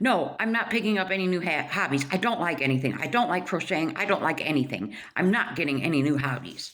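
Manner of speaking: put-on short-tempered, curt, rude, irritated snap. Retelling how a woman answered someone suggesting a new hobby; mock-snapping rudely. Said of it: "And she just snapped".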